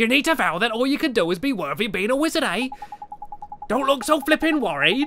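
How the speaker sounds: high, clumsy fake Welsh accent. Voicing a character explaining the wizard's pledge, in an attempted Welsh accent. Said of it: "I apologise if any Welsh viewers are listening".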